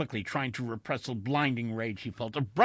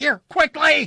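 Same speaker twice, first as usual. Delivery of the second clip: shrill, very high, full-volume shout; 14 dB louder than usual. Narrator reads Wilson calling to the stewardess and pilot, shouting. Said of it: "he shouted".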